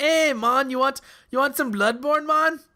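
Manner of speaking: put-on Jamaican accent, high, slow and unhurried. Joking about a Danish blood drive for a game: put-on Jamaican accent. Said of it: "that's Jamaican Danish".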